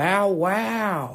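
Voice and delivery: dog-bark sound with "wow" stretched out long. Doing an impression of Owen Wilson as a dog: Owen Wilson voice. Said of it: "That's Owen Wilson as a dog".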